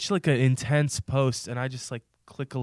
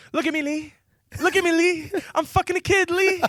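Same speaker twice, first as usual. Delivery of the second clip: very high, comic movie-sidekick character voice; 4 dB louder than usual. Quoting a Rush Hour line: Chris Tucker voice. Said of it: "That's Chris Tucker".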